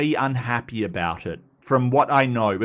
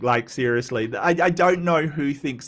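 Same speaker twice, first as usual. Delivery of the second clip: plain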